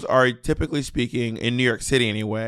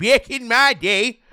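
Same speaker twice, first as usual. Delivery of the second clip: put-on pitched-up little old lady voice; 10 semitones higher, 4 dB louder than usual. Prompted by the other speaker, the speaker does a little old lady voice. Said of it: "your little old lady voice you love doing".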